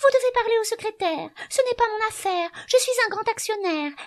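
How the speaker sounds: very high, mocking, put-on falsetto. Narrating a story, the reader voices a woman answering in a falsetto voice. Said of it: "prit une voix de fausset".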